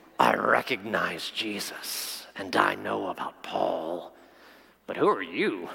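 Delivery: deep evil spirit voice. Reading a Bible passage aloud, voicing the evil spirit: demon voice. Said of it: "I'm going to use a voice".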